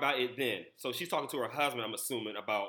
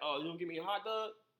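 put-on Baltimore accent, higher pitch; 5 semitones higher, 5 dB quieter than usual. Explaining how a word is said there, the speaker puts on a Baltimore accent. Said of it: "Give me, like, a Baltimore accent".

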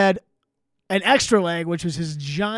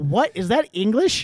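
normal talking voice

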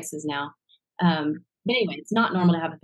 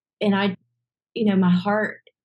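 usual speaking voice

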